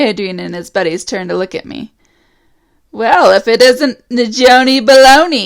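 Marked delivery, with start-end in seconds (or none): 2.9-5.5 slow, annoying, irritating drawling voice. Reading a story where a bully taunts the narrator: irritating drawl. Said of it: "Adrian drawls in that irritating voice".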